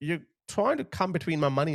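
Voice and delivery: plain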